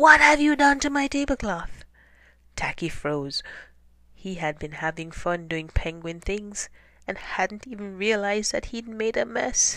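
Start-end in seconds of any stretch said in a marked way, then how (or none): 0.0-1.8 very loud, high, booming bellow. Reading the story aloud, the narrator voices Rocky bellowing at Tacky. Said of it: "and bellowed".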